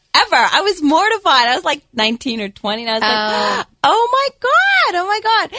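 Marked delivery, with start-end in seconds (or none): 2.8-5.4 put-on valley girl voice, much higher pitched. Retelling her younger self's reaction, in a Valley girl voice. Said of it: "she sounds like a Valley girl".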